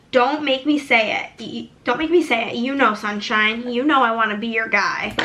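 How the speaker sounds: ordinary talk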